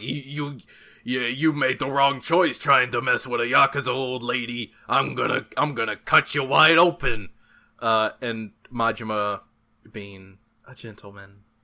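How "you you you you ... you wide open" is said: menacing street thug voice, stammered start. Retelling a game scene where a thug pulls a knife: imitating a knife-wielding thug. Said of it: "the guy pulls a knife on her and is like".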